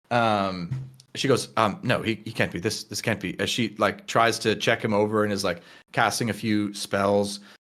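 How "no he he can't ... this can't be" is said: hushed, rushed voice with panic starting to rise. Narrating a scene, the speaker voices a woman as she starts to panic: panicked. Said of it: "she sort of starts to panic".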